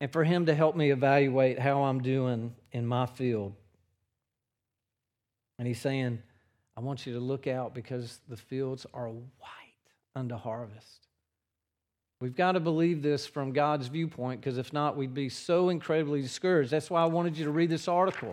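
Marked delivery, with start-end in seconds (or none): 6.8-11.1 soft, low whisper. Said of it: "is gonna whisper".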